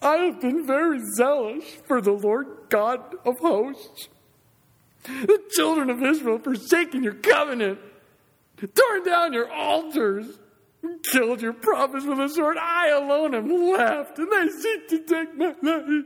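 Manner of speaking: mock whiny, whimpering voice, very high pitched. Reading verse 10 aloud to the congregation in Elijah's whimpering, whiny voice. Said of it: "my Elijah whimpering, whiny voice".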